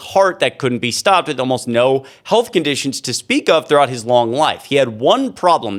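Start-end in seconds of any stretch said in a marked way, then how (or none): none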